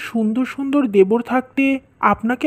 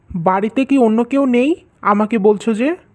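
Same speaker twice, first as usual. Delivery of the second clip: ordinary delivery, nothing marked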